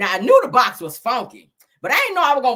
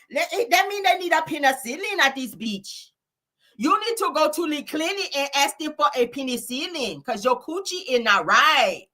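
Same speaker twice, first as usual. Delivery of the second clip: comic, pitched-up, put-on Mexican accent; 7 semitones higher, 3 dB quieter than usual. Saying the same point again in a put-on Mexican accent. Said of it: "Let me say it in my damn Mexican voice".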